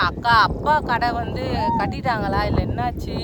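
normal talking voice

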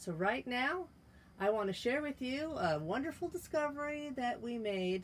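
sarcastic, ironic, over-sweet tongue-in-cheek delivery. Vlogging from their trailer, the speaker introduces a discovery to viewers, sarcastic. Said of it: "sarcasm there".

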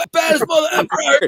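put-on very high battle-cry yelp, screamed. Retelling charging up a hill with a machete and a frying pan: retelling a scream. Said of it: "And I'm screaming and yelling for like 10 minutes".

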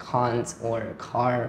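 slow, drawn-out British pronunciation of can't and car.

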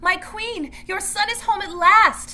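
loud, very high, slow, drawn-out proclamation. A messenger addresses his queen among her women, announcing loudly. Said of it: "the messenger announced loudly".

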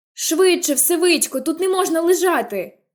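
called out in a high, light voice. Jem urges the fallen narrator up by the Radley porch, shouting. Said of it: "кричав Джем".

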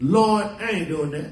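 ordinary delivery

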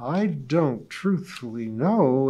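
hesitant, doubtful, unsure, slow and unhurried. Bertha answers her neighbor Polly's request about curtains, doubtful, in a slow voice. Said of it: "she began doubtfully in her slow voice".

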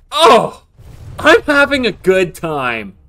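cheerful. During a game against an opponent who can hear them, happy. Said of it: "You sound too happy".

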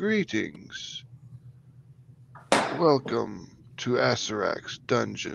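slow, breathy, dead-sounding corpse whisper, breathed out. Voicing the shriveled corpse in robes greeting the party: Withers, shriveled corpse voice. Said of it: "He's like".

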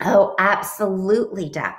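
ordinary delivery, nothing marked

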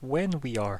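solemn, earnest, grave, dead serious. Voicing a character who explains the sundial: said very seriously. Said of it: "looks at you really seriously, goes".

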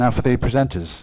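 plain

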